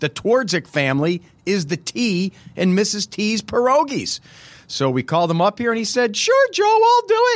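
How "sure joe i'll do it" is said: put-on girl voice, very high and girly. The speaker quotes a man agreeing to come do the interview, girly voice. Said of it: "that was my girl voice".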